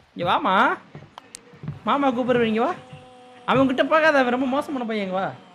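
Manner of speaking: high, sweet, coaxing tone.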